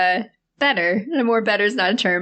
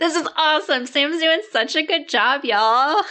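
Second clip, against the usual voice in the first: slow, high, hollow sarcastic fake enthusiasm; 5 semitones higher than usual. Cheering on the other host after being called the worst hype man: sarcastic fake enthusiasm. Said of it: "I can feel the sarcasm through my monitor".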